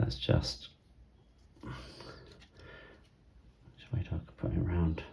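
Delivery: very soft whispering.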